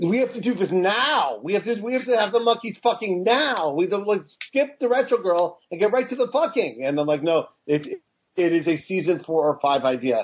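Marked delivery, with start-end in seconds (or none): 0.0-6.8 put-on heavy South African accent, higher and faster. Retelling what a man proposed for the show, in a thick South African accent. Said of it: "a very thick South African accent".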